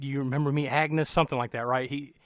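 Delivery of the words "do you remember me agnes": usual speaking voice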